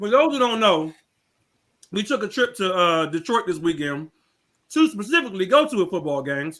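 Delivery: speaking through a mouthful of food. Speaker talks to listeners while eating, talking with mouth full. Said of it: "I'm chewing with food".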